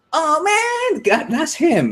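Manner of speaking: put-on nasal voice. Showing how a stand-up comedian talks, do a high-pitched, nasally Aziz Ansari impression. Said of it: "He's really high pitched and nasally".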